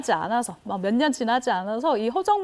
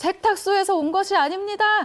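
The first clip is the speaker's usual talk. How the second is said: high-pitched shouting. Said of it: "이렇게 소리를 질렀다고 합니다".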